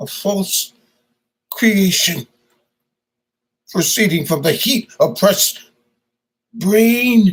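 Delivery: very high, broken, haunted, troubled, halting voice. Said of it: "and his spirit is troubled. He can't really deal with what he's done. / and his spirit is troubled. He can't really deal with what he's done. Is this a dagger I see before me? / uh, the character that".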